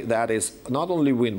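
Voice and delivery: ordinary talk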